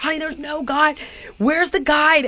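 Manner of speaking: urgent, exasperated screaming. Stranded with no guide and calling Heidi, retelling screaming on the phone. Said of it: "I'm like screaming on the phone".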